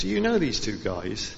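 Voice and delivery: ordinary delivery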